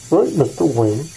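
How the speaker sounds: muffled villain voice behind a respirator mask. Joking about sounding masked in a respirator: Bane voice. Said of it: "I sound a little bit like Bane anyway with this respirator".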